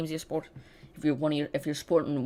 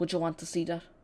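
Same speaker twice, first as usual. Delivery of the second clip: terrible put-on Irish accent; 3 dB quieter than usual. Asking live chat about a football match, repeating the question; terrible Irish accent. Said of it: "that was a terrible accent".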